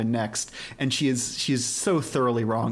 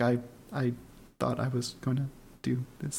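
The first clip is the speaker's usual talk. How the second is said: put-on mumbling voice, quieter; 6 dB quieter than usual. Imitating Tomoko replying after someone says they cannot hear her: mumbling like Tomoko. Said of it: "mumbles a lot".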